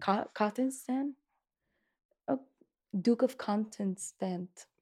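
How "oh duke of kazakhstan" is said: vampire-like voice, much quieter. Playing out a Bridgerton-style scene with a friend, in a vampire-like voice. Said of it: "You sound like a vampire".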